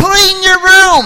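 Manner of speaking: booming, very high, shrill repeated yelling. Acting out someone ordering a room cleaned: retelling a yell. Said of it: "You don't have to yell".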